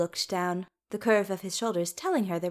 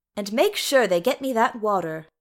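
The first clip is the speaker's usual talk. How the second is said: ordinary delivery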